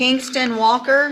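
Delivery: loud, high, slow drawn-out calling voice.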